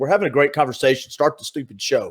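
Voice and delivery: plain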